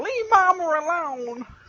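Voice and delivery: very poor put-on voice, very high, very loud, shrill. Acting out the reply to a prank call: very poor impression of Kiwi. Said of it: "That was a very poor impression".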